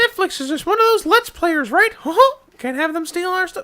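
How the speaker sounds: very high-pitched cartoon mouse voice. Joking with the others about licensing: Mickey Mouse voice. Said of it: "I stopped doing the Mickey voice".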